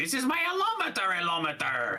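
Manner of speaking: very high, wild, swooping exclamation. Joking about a book of single images: Doctor Doofenshmirtz impression. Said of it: "That was a really good impression".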